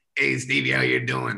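heavy, rough, creaky smoker's rasp. Imitating his dad greeting him by name, imitating dad's smoker voice. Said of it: "sounds like he eats like Marlboro cigarettes for breakfast".

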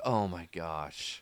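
mock boredom, low and weary. Retelling how everyone listening to Morgan reacts: imitating bored listeners. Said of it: "everyone is bored".

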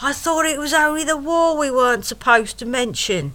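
high-pitched bellowing. Retelling how the date shouted down the train carriage, retelling a bellow. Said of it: "She bellows down the train carriage".

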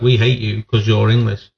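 ordinary delivery

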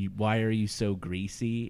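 ordinary talk

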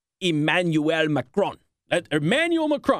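name said with a Colombian-sounding accent. Saying the name Emmanuel Macron to ladies and gentlemen, in a Colombian-sounding accent. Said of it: "I made him sound like he was Colombian".

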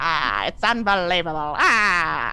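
very slow, lingering over a stretched "ah". Showing how the attempted impression comes out: Katharine Hepburn voice. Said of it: "it comes out like Katharine Hepburn".

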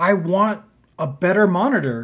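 slow scream with each word dragged out. Retelling a complaint about a slow monitor: imitating someone screaming.

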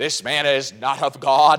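mock smug, slow, conceited self-righteous tone. Quoting the Pharisees from verse sixteen, imitating a conceited, self-righteous tone. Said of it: "Can you just hear the tone of voice".

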